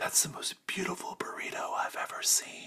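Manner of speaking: hushed, quiet whisper under the breath, barely voiced. Narrator voicing Hambone as he whispers quietly under his breath. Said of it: "you can hear him whisper so just quiet under his breath".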